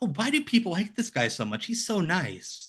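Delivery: naive, starstruck fan voice. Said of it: "And it's like".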